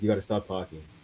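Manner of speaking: put-on muttering under breath. Retelling what a player said to a trash-talking opponent: imitating Chelsea Britton muttering under breath. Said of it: "I heard what she was saying under her breath".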